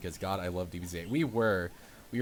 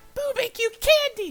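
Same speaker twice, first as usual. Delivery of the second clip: very high, loud cartoon voice; 10 dB louder than usual. Asked for a Buu impression, the speaker gives it a try: high-pitched Buu impression. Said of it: "he's got a really high-pitched voice".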